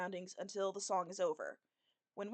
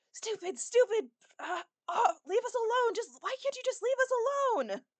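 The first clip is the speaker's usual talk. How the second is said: furious, very high-pitched angry yelling; 14 semitones higher, 7 dB louder than usual. Voicing a character smashing a box with a scythe: shouting in anger. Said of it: "just shouting, like".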